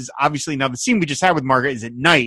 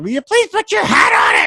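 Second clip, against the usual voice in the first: put-on screaming at top of lungs, higher, louder; 5 dB louder than usual. Retelling a TV scene, imitating Loretta Swit screaming at the top of her lungs. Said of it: "she's screaming at the top of her lungs".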